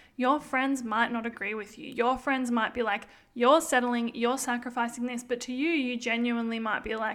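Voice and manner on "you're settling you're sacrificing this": plain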